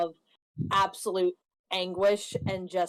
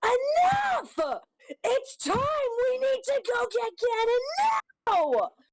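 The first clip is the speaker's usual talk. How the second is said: put-on very high, shrill, swooping tearful scream; 4 dB louder than usual. In a tabletop game, the narrator voices a character's outburst: screaming through tears. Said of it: "out this scream".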